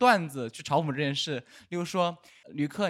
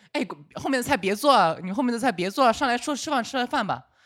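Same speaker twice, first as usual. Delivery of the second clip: put-on falsely polite, insistent tone, high pitched; 6 semitones higher, 4 dB louder than usual. Retelling the men telling the cook to stop cooking: imitating fake politeness. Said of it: "好像假装客气讲一句".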